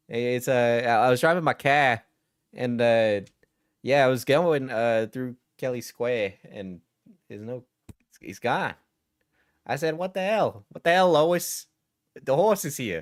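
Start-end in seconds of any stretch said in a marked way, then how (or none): 9.9-13.0 put-on Brooklyn accent, pitched up. Retelling own reaction while driving through Kelly Square: Brooklynese accent. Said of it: "I can't help but do, like, a Brooklynese accent".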